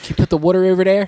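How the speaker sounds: put-on Philadelphia accent. Joining in on the request with a Philly accent. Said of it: "in a Philly accent".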